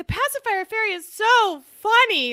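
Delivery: acted talking while laughing. Retelling a phone call to the pacifier fairy: imitating laughing while talking. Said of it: "I'm laughing. I'm like".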